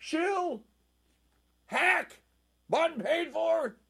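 shrill, very high, loud shout. Recounting reading a piece, the speaker acts out shouting across the room: retelling own shout. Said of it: "I shouted from across the room".

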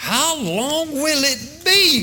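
high, slow, drawn-out, frustrated, exasperated voice.

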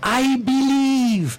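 put-on English spoken with a Spanish accent. Recalling how he turned around to us after a touchdown, in Chibi's Spanish-English accent. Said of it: "in this sort of Spanish-English accent".

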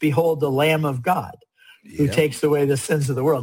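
plain

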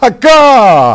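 emphatic, mournful, cried-out "akah". Showing how the hebrew word akah is said with emphasis: crying out akah. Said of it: "if you wish me to put the emphasis on it".

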